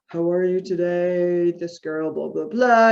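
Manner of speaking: flat, level monotone with no inflection. Mimicking parents reading aloud to their child, flat monotone reading. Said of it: "You have this monotone voice".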